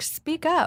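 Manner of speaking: sharp snap. Retelling snapping at visiting mom and brother: retelling snapping at someone. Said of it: "I snapped and I was like".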